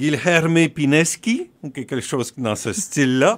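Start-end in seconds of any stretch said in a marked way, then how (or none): 0.0-1.5 mock Portuguese accent, much higher pitch. A show host introducing a guest by name, in a put-on portuguese accent. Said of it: "je vais sortir mon meilleur accent portugais".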